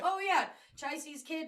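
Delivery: casual, unbothered tone. Acting out Kalyan casually admitting he is the baby's father: imitating Kalyan's nonchalant tone. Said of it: "so nonchalant about it".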